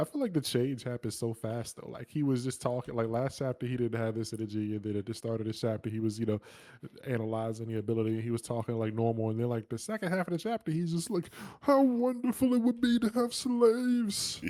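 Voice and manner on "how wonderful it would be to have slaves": put-on very high, slow voice talking through tears. Retelling a character's words in the chapter: imitating someone crying while talking. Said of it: "Crying and shit like you said".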